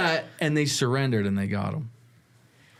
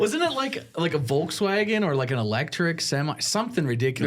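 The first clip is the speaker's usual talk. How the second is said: usual speaking voice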